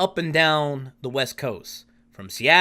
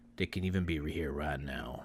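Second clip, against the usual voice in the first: put-on, utterly grave, deep and very quiet dead-serious hush; 13 semitones lower, 13 dB quieter than usual. Recounting what a man said during a story, retelling in a dead serious tone. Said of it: "in the most dead serious tone".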